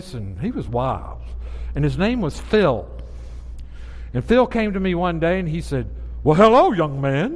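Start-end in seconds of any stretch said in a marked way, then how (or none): 6.2-7.4 loud, big, dramatic preacher-style voice. Retelling how a goofy guy greeted him one day, preacher voice. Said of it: "in a preacher voice".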